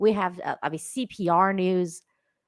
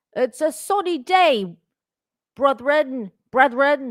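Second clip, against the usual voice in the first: loud, fake English accent; 7 semitones higher, 5 dB louder than usual. Voicing what a soldier who wore the sun hat might have said, put-on english accent. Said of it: "Why do they sound English?".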